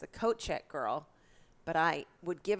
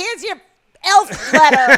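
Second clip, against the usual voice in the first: formal, official legalistic delivery at a higher pitch; 9 semitones higher, 20 dB louder than usual. Retelling how an angry fellow elf delivered letters: imitating Neil serving a subpoena. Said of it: "he'd deliver the letters like they were court subpoenas".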